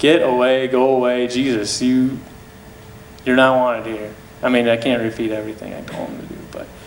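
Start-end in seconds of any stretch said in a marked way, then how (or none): none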